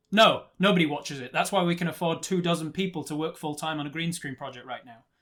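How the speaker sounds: very loud, barely contained, sarcastic voice. The speaker retells turning to a man and answering him, a retold sarcastic retort. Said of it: "barely able to contain my sarcasm".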